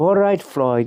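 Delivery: put-on slight British accent. Retelling a candy store owner's reply to a young customer: British accent. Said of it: "a kind of a British accent".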